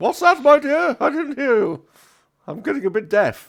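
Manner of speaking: shrill, booming, drawn-out, very high, loud doddering butler. Voicing an old butler who is getting a bit deaf: doddering old butler voice. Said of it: "he leans into you saying".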